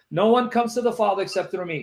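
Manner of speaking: normal talking voice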